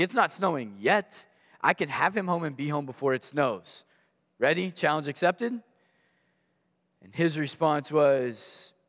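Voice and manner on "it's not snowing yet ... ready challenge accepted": ordinary talk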